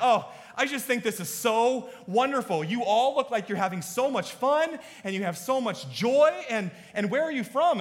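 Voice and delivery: high, loud gushing delight, beside herself. Retelling a lady from another float gushing over them: imitating an overwhelmed, delighted lady. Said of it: "she's just beside herself".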